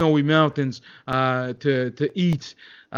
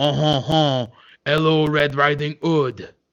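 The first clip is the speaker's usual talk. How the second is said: slow put-on French accent, storybook tone. Telling a made-up story, voicing a bear: french accent. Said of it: "a bear, that could only speak in a French accent".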